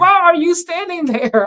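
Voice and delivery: mock very high, exasperated, livid yell. Retelling yelling at the TV during a game: retelling yelling at the TV. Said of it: "yelling at my T V".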